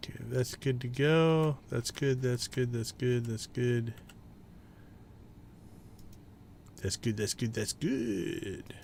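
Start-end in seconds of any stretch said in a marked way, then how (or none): 1.7-8.6 whispery, breathy, hushed little puppet chatter. Speaker checking items off, breaking into a favorite puppet impression. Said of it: "That's my favorite puppet impression".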